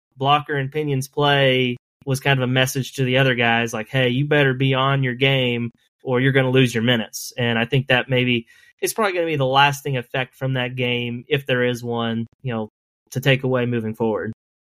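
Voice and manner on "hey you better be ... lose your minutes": ordinary delivery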